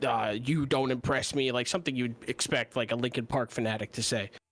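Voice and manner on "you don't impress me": put-on intimidating character voice, lower pitched. Quoting a game character's emote voice line: imitating an intimidating Sevarog line. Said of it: "pretty intimidating".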